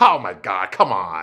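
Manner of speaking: put-on laughing speech, slow and very drawn out. Retelling a woman's answer to rob's marriage proposal, imitating someone laughing. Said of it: "And she's just laughing like".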